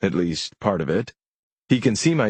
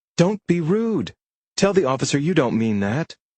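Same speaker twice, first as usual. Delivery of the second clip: curt, snapping, scolding, higher pitch; 7 semitones higher than usual. Reading a story where a parent scolds the giggling girls: snapping. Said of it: "Marty snaps".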